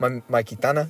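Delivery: put-on, mimicked Spanish accent. Remind the person you're talking to how they said it, in a put-on spanish accent. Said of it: "in a Spanish accent".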